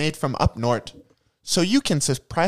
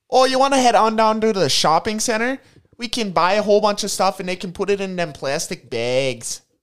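put-on overdone Minnesota accent; 4 semitones higher than usual. Acting in a mock product ad with another performer, over-the-top northern Minnesotan accent. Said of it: "you must use the northern Minnesotan accent".

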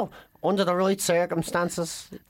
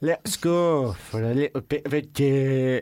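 low, slow put-on Liverpool accent, poorly done. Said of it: "But okay, for the last time".

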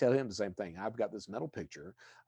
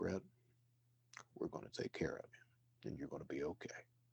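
acted, grave, earnest, hushed near-whisper; 6 semitones lower, 10 dB quieter than usual. Speaker retells what a man said after looking at him: retelling a serious tone. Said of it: "he gets real serious and he looks at me".

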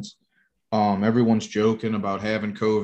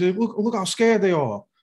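very high, jeering, mocking taunt laughed through; 10 semitones higher than usual. Retelling a man pointing out frightened people to his friends: imitating his mocking laugh. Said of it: "he's just laughing and he's like pointing his friends".

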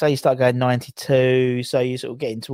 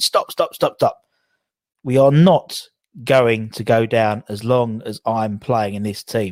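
ordinary delivery

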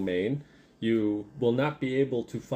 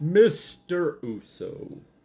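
voluptuous, full, lush booming voice, pitched up; 6 semitones higher, 4 dB louder than usual. The Lantern King addresses Mr. Uso; booming Lantern King voice. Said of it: "rather voluptuous booming voice".

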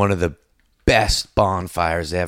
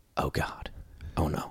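put-on mutter, lower and quieter; 4 semitones lower, 14 dB quieter than usual. Retelling waking up as a man dug a hole: imitating muttering under breath. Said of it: "very under my breath".

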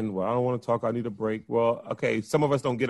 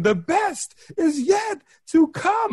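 acted, very high, slow, drawn-out scream; 5 dB louder than usual. Acting out a woman's line at the end of her speech, imitating her screaming. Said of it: "she's screaming".

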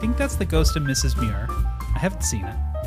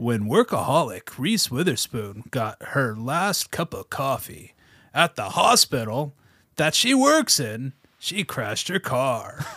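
movie trailer narrator voice, much slower. Trying out a voice for the other speakers, in a movie trailer voice. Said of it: "I really want to have a movie trailer voice".

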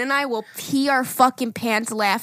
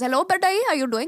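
put-on Indian accent, higher; 6 semitones higher than usual. Asked to show an Indian accent, imitating Zayn's dad calling him. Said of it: "Go with your Indian".

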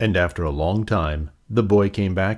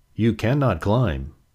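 plain

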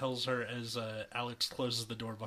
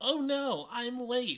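shrill, high, loud and drawn-out panicked cry; 13 semitones higher, 6 dB louder than usual. Narrator reads a girl reacting after checking the alarm clock; panicked. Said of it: "she panics".

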